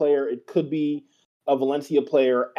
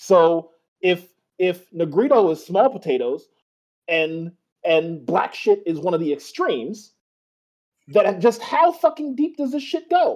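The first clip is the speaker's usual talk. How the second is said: raised, heated angry voice, swooping and climbing pitch; 3 semitones higher than usual. Speaker, incensed about a racist insult aimed at a football player, speaks with a raised voice. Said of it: "I'm raising my fucking voice".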